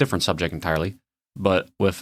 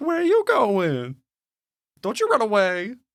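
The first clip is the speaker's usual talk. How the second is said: high, swooping, sleazy pimp character voice. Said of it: "I imagine he talks like a, like a seventies, uh, sleazy pimp".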